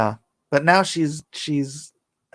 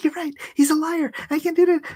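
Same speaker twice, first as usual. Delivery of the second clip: very high-pitched, delighted, happy gush. Retelling how a friend ran up after her breakup, imitating her being happy. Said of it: "she's like all happy that she broke up".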